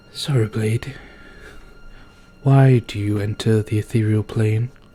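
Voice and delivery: whisper rising to full voice. Narrator voices the voice a player's character hears, whisper growing louder. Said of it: "it starts off as a whisper, it gets louder".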